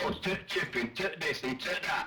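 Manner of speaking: mocking, botched fake local dialect. Mocking people who try to talk like them: mocking outsiders faking our way of talking. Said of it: "when people try and talk like us".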